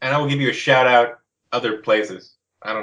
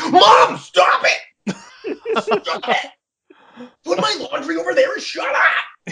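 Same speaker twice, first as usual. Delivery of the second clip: whiny cartoon tantrum, very high and very slow. In a podcast bit, the speaker's character snaps at his mom: upset cartoon voice. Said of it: "Sounds like upset Randy on South Park".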